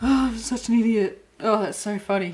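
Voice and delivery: talking while laughing and giggling. Talking about a blanket not finished for retreat, laughing while talking. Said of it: "I've got the giggles".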